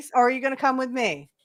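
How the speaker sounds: mock grave, dead serious, confrontational, in-your-face. Retelling a wrestler confronting another, imitating a serious threat. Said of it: "Real serious, in the face".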